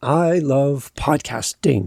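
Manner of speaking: authoritative tone, pitch falling down onto podcasting. Teaching intonation with a statement of authority: pitch falling to firm end. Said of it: "My words went down and I ended with authority".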